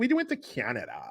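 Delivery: slow, vapid, empty-headed ditzy voice. Imitating how a woman in the news might talk: imitating a vapid dummy. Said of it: "She just seems like a vapid dummy".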